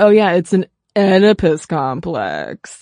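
dripping with sarcasm, swooping delivery. Imagining Freud had been sarcastic the whole time: sarcastic Freud impression. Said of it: "What if Freud had been sarcastic".

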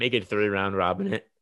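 voice breaks mid-sentence. Arguing for a three-team round robin, voice crack. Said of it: "that was huge voice crack".

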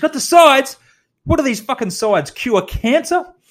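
screamed, very high-pitched. Retelling a boss who storms in over expenses: imitating someone screaming. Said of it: "he starts screaming".

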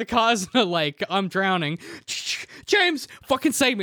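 put-on hammy theatrical panic, high and slow. Joking about too many seatbelts, pretending to drown: mock drowning panic. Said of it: "That was a bit of pantomime".

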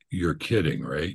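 ordinary talk, nothing marked

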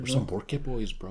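put-on New Mexican accent. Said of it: "People are gonna think we're locals".

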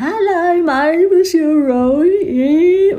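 very slow, very high voice, drawn out. Speaker describing the members of the gang, imitating Gladys's very slow talk. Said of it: "She talk really slow ... she's ever so drawn out".

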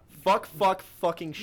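very high, shrill, very loud yelling. Cursing after the recording program cuts out, yelling into the mic. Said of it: "Don't yell at the mic".

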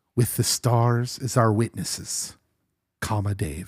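slow, drawn-out, secretive half-whisper. Reading aloud a funny letter sign-off to listeners: half-whispering. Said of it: "I'm going to whisper it".

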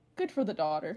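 ordinary talk

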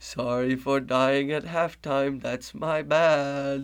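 put-on spooky ghost voice. During a basketball game, a player apologizes to his coach for dying at halftime: ghostly voice. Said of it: "a special ghostly voice".

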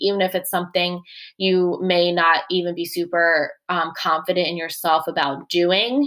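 usual speaking voice

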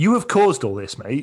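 loud, high-pitched ranting.

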